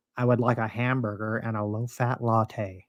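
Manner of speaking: very quiet, put-on American accent. A Scottish speaker retelling what an American he met said, in a put-on American accent. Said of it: "I can switch to American".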